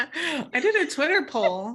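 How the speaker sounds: laughing delivery, high-pitched and slow.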